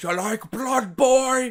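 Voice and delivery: put-on strange old man voice, loud and high. Describing a spooky shortcut movie, speaker plays an old man walking up: old man voice. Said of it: "An old man walks up to you and goes".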